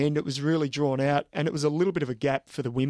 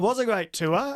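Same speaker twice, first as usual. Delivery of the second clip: voice lifting upward into a high, pitched-up echo; 6 semitones higher than usual. Agreeing that a race was a great tour, pitch going up. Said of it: "You hear the pitch in my voice go up".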